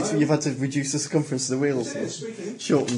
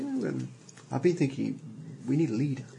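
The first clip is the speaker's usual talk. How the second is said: sidelong, hushed, quiet half-whisper; 5 dB quieter than usual. Voicing Red Shirt coming up to the group to suggest a leader: half-whispering. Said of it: "just whispers".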